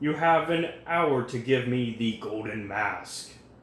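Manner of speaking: stagey, grand, mysterious pronouncement. A mysterious man makes his demand to the people at the party; booming voice. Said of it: "He speaks with a booming voice".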